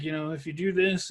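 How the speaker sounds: mumbling under breath. Recalling showing coworkers a trick, retelling mumbling under breath. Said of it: "kind of mumbling through it under my breath".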